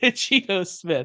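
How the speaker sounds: disdainful, contemptuous tone on a name. Repeating the name the way the other speaker said it: imitating a disdainful tone. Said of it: "you said it with such disdain".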